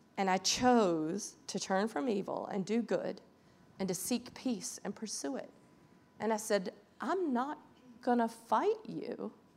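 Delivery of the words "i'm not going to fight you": put-on calm tone, much quieter. Recounting choosing peace when challenged to fight: retelling saying it calmly. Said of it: "I just said it very calmly".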